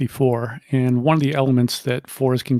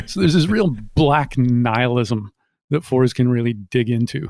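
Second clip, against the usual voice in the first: plain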